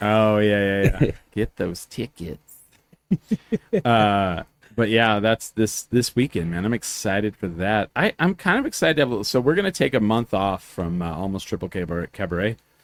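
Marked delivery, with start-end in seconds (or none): 1.3-2.4 put-on preacher voice, quieter. Urging listeners to get tickets, in a Letterkenny preacher voice. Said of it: "the preacher from Letterkenny".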